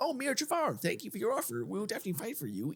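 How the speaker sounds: put-on very high, sing-song Dutch accent. Voicing the Dutch accepting Mir Jafar's offer: put-on Dutch accent. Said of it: "such an addictive accent to do".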